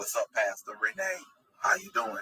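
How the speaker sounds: put-on low, soft daddy voice. Greeting a pastor, bringing out a Daddy voice. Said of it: "I had to bring out Daddy voice".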